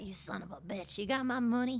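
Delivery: low, wise-guy, tough-guy gangster voice. Voicing an angry cat asked to go on a walk, gangster cat voice. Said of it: "that's like a gangster cat".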